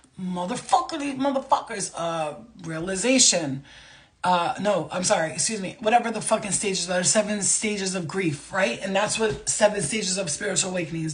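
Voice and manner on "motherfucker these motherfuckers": mock angry outburst, higher. Acting out the anger stage of spiritual awakening: acting out anger. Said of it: "Fucking anger".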